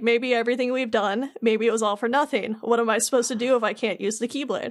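usual speaking voice

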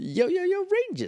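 very high, squeaky voice, pitch cranked up. Slipping into a quick bit while discussing an episode: Alpha Six voice. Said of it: "that was Alpha Six".

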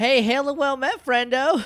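shouting. Calling out a greeting to someone across the water: yelling a greeting. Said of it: "Do you just yell?".

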